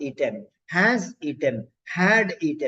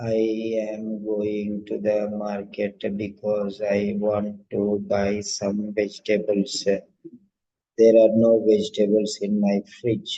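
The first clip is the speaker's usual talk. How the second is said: flat, even, unvaried monotone delivery; 9 semitones lower than usual. Demonstrating to learners how a flat tone sounds, in a flat tone. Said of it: "So flat tone".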